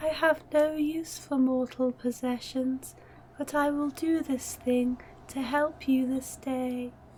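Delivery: unsettling, spooky, creepy voice. In a tabletop game, a character addresses the players, creepy voice. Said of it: "That was exceptionally creepy".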